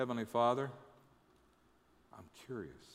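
quiet whisper. Suggesting a prayer the listener might say, as a whispered prayer. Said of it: "Would you whisper a prayer that goes".

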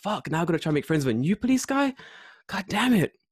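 put-on fed-up, exasperated, rising-pitched complaining tone. Retelling own reaction to meeting a new police officer: imitating own past frustration. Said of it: "And I'm like".

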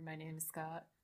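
mock bored, lifeless delivery, low, quiet and rushed.

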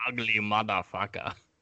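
put-on growling action-movie hero voice. Quoting a movie line as Arnold Schwarzenegger: Arnold Schwarzenegger impression. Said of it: "That was my Schwarzenegger impression".

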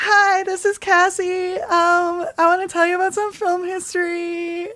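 very high, slow, drawn-out ghost voice. Voicing Cassie as a ghost during a pretend seance: Cassie's ghost voice. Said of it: "give us Cassie's voice".

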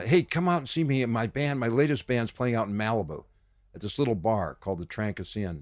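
plain

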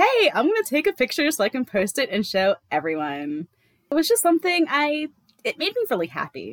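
put-on, high, swooping Valley Girl accent. Making fun of a convicted criminal the way you hear her, in a Valley Girl voice. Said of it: "that's definitely Valley Girl".

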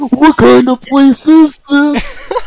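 loud, very high-pitched cartoon character voice. Asked to do another impression, [name] performs a cartoon character impression. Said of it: "That's pretty good".

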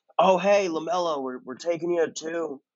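clumsy, laid-back California voice. Retelling a phone call to a draft pick: bad Steve Kerr impression. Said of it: "my really bad Steve Kerr impression".

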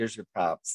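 usual speaking voice

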